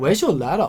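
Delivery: put-on voice, every line rising at the end. Retelling a question asked at the workshop, imitating Christos. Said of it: "that's exactly how he speaks".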